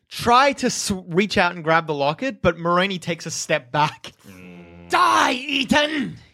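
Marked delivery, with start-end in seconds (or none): 4.9-6.1 high, shrieking, screeching cry. Game master voicing Moroni as a player reaches for the locket, screeching as Moroni. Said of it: "He screeches at you".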